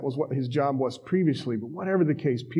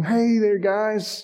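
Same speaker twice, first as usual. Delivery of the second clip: high, loud call carrying far. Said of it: "he yells at him".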